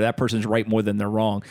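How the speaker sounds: ordinary delivery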